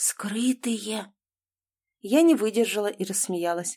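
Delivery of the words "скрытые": horrified whisper, quieter. She finishes telling the narrator what she heard the doctor say: whispered in horror. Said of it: "Она в ужасе расширила и без того круглые глаза и прошептала".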